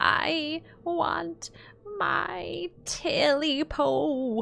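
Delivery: high-pitched, hoarse croaking voice. Narrator voicing the thing croaking from the darkness, in a high, hoarse croak. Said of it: "A high, hoarse voice croaked".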